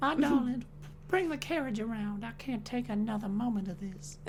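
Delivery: very hushed, high put-on Southern belle accent. Riffing on a movie character as a southern belle, in a southern belle accent. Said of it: "I can do that voice really well".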